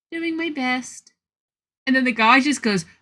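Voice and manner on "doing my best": sugary sweet little voice, pitched up. Retelling answering a guy's remark, in a put-on sweetest little voice. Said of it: "I tried to put like my sweetest little voice on".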